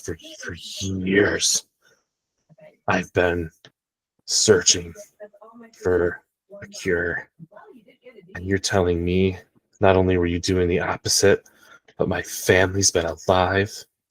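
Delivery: acted, furious rage-crying outburst. Voicing a character confronting another doctor in the scene: rage crying in character. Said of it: "rage, crying".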